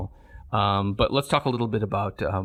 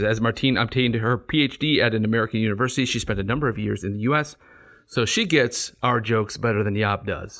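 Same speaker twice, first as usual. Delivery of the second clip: ordinary talk, nothing marked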